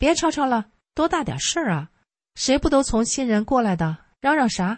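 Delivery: high, harsh, scolding rebuke.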